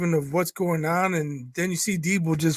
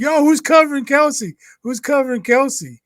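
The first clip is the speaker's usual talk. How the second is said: loud, high hollering yell; 8 semitones higher, 5 dB louder than usual. Speaker acting out how they yelled while watching a play, retelling own yell. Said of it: "I'm yelling like".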